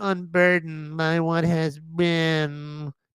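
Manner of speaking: lazy California surfer voice. Speaker quotes a phrase after mocking a cackle, in lazy california surfer girl voice. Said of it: "I've got that lazy California surfer girl voice".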